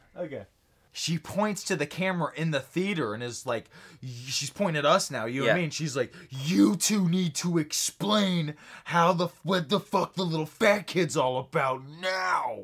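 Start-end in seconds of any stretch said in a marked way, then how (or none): 6.2-12.5 put-on fury, woman's voice, much slower. Acting out an imagined woman in the theater pointing at the two of them, imitating a furious woman. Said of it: "she's real mad".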